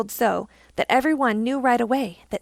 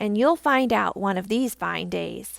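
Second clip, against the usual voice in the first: ordinary delivery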